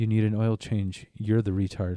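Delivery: normal talking voice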